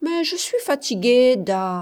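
clearly displeased, unhappy, objecting tone. Narrator reads her answer after being told to go play, displeased protest. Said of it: "protesta-t-elle, mécontente".

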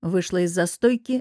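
plain

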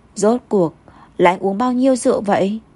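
ordinary delivery

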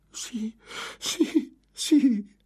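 shrill, very high-pitched, loud joyful cry. Reading a novel, a prisoner hears footsteps approaching, cry of joy. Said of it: "lanciando un grido di gioia".

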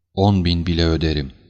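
plain reading voice

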